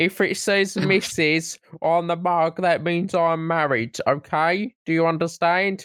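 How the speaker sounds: fake Canadian accent, really nasal. Acting out what a woman said as her excuse, in a put-on Canadian accent. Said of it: "In a Canadian accent".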